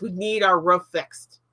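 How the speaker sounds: ordinary talk, nothing marked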